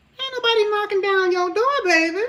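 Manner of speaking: very high-pitched natural voice. Retelling a line that someone said years ago: imitating how she said it. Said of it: "it was how she said it".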